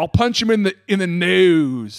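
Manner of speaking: put-on very slow old man voice, nasal and stretched. Repeating an old man's threat from a clip: imitating an old man's accent. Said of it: "I love that accent".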